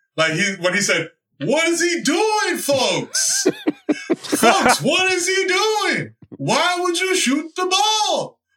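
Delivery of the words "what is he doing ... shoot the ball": exasperated, very high, swooping, drawn out. Retelling what Clyde said when a player shot the ball, imitate Clyde's exasperated voice. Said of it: "the exasperation in Clyde's voice".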